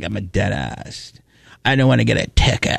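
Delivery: words dragged down into creaky, rough vocal fry. Imitating a dentist from a clip: imitating vocal fry. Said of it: "I didn't really appreciate her vocal fry".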